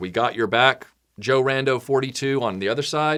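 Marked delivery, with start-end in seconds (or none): none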